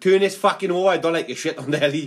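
normal talking voice

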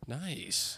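soft, whispered aside.

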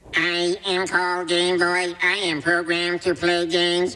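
high, monotone, droning robot voice. Quote the Game Boy character from the show, in an annoying Game Boy robot voice. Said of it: "the most annoying robot voice".

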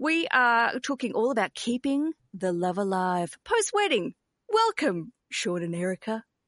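put-on, polished commercial-radio host delivery. Introducing the episode topic with guests, commercial radio announcer voice. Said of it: "That was my best commercial radio".

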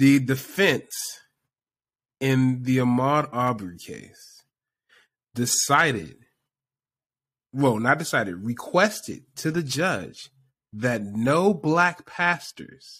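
very slow, deliberate pace. Repeating a point again after another speaker asks: speaking very slowly. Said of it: "I'm gonna repeat this again to you very, very, very slowly".

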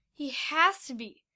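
plain

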